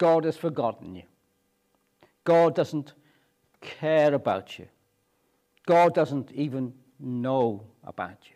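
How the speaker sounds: ordinary talk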